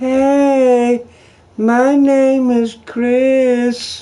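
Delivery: put-on very high, very slow, squeaky chipmunk kid voice. Teasing Chris that his voice hasn't dropped yet, mocking Chris's chipmunk voice. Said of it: "Just a little chipmunk kid".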